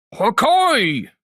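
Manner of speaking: character voice with "okay" stretched out. Showing how a loud voice-acted line is tricky: loud Toppo voice. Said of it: "when you say something loud and you try to voice act".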